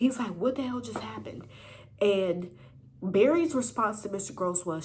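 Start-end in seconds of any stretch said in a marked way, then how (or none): 0.4-1.5 very angry, heated, demanding tone. Retelling how Mister Gross questioned Barry: imitating an angry Mister Gross. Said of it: "he was so mad".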